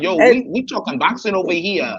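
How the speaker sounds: drawn-out New York drawl, very slow. Retelling what Rachel said about boxing, imitating Rachel's New York accent. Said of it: "Rachel had a New York accent and everything".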